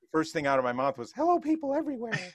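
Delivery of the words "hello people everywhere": very high, squeaky chipmunk voice. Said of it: "my little monk chip, you know, chipmunk voice".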